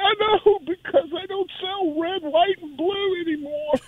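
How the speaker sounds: fake sobbing. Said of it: "I'm crying".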